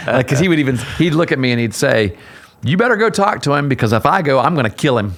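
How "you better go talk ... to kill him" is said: loud, blunt, mock delivery said right out. Retelling what the coach said during a game, not quietly: imitating Coach Gibson saying it loudly. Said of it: "he wouldn't say it quietly either".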